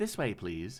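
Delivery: synthetic, electronic machine announcer voice. Narrator voices a drone directing the party's car: electronic voice. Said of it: "An electronic voice will say".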